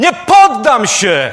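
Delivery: loud, shouted cry. Showing a listener how they would cry it out, demonstrating a shout. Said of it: "to byś krzyknął".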